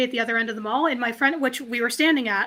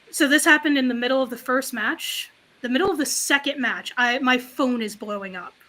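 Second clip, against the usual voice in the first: ordinary talk, nothing marked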